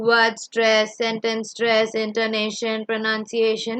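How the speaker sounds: level, flat, machine-like robotic monotone. Demonstrating speech without high and low pitch, a flat robotic delivery. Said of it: "I don't talk like a robot... I don't talk like that".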